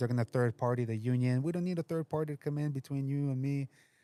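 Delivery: ordinary talk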